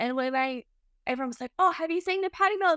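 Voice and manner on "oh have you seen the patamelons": high, fast, excited gushing voice. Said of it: "And they were so excited".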